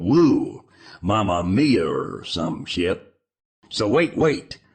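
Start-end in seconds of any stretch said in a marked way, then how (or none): 0.0-1.9 put-on exclaiming man's voice, lower. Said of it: "And he's all".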